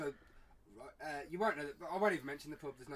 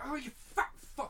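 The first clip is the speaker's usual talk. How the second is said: mock, very high, sudden yelled outburst; 11 semitones higher, 4 dB louder than usual. Telling a story about a kid late for school, retelling a shout. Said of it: "but I shouted".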